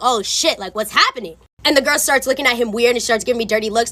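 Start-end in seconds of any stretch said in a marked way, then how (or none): 0.0-1.4 mock rattled, jumpy, nervous, panicky man. Retelling how the boyfriend reacted when recognized: imitating a nervous man. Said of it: "he starts to get nervous".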